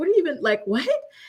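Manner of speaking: high, stunned, shocked, confused, bewildered disbelief. Retelling how a woman reacted when he screamed at her: acting out a shocked woman. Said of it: "this woman is just so shocked".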